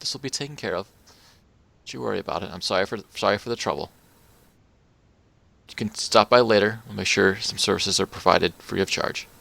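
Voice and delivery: hushed, quiet, soft-spoken, under the breath. Narrating a game scene, voicing a woman speaking to a man: quiet voice. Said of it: "you know quietly says like".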